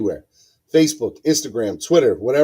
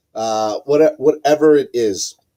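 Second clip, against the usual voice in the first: ordinary talk, nothing marked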